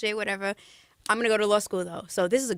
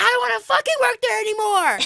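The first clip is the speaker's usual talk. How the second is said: put-on very high, top-of-the-lungs loud drunken shout; 13 semitones higher, 7 dB louder than usual. Retelling a night out, yelling in the street: imitating own drunken yelling. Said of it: "Yelling at the top of my lungs".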